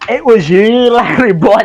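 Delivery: put-on very high, loud, drawn-out full Scottish accent. Retelling how the judge stands up and accuses someone: full Scottish accent. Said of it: "goes into full Scottish".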